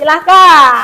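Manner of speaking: loud, high calling out.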